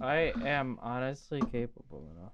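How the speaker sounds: glum, defeated, dejected, depressed-sounding tone. Insisting you can do the ranking yourself: sounding depressed. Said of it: "You sound so depressed behind saying that".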